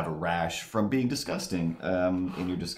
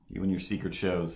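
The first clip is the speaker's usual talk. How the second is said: ordinary talk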